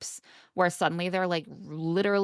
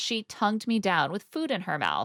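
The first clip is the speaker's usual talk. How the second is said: usual speaking voice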